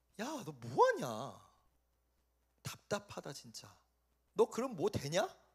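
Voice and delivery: soft, mocking, taunting tone. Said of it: "조롱하고 학대했다".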